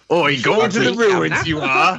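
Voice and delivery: really bad put-on Cockney accent, loud and high. Voicing a character after another speaker jokes about a bad accent: bad Cockney accent. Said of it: "with a really bad Cockney accent".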